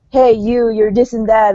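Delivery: ordinary delivery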